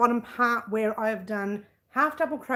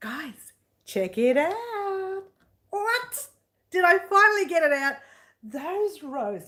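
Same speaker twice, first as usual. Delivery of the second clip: loud, excited yelling, pitched higher; 7 semitones higher than usual. Showing off finished crochet rows, excited yelling. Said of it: "am I yelling?".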